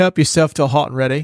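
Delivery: put-on British accent with Australian creeping in. Imagining a film director offering actors pizza: Chris Nolan impression, British accent. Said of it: "my British accent sounded a little bit Australian".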